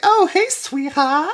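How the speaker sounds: high, slow, squeaky put-on cartoon flapper voice.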